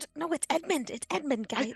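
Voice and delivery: whispering. Still whispering to the group after hearing a voice: whispering. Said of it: "I'm still whispering".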